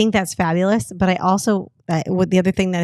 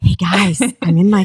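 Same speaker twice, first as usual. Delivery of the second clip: mock whispering; 6 dB louder than usual. Retelling filming videos in the closet at five in the morning: imitating own past whisper. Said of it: "I'm whispering 'cause it's, like, at five in the morning".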